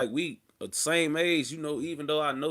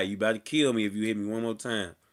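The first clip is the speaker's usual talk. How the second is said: ordinary talk, nothing marked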